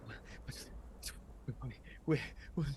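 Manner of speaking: fast, very quiet, broken, terrified, panicked muttering. Voicing a disoriented soldier aiming his rifle: panicked muttering.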